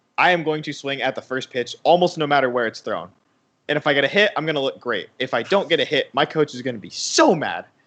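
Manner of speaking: ordinary talk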